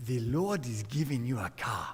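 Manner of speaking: put-on low Nigerian accent. Quoting a man from Nigeria at his house, in a put-on African accent. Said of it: "It's my African accent".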